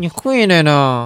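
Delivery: put-on gritted-teeth speech. Retelling how his mother said these words, imitating speech forced through clenched teeth. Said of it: "就咬着牙挤出来那几个字儿".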